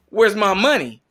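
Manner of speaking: forceful, assertive, demanding tone, pressing hard. Retelling how Tractor Granny talked to the French interpreter, imitating Tractor Granny's very assertive voice. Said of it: "in a very kind of assertive voice".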